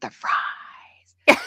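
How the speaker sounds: soft, hushed attempted whisper. Retelling how Barb leaned over to a woman eating: imitating a whisper. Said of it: "she tried to whisper it".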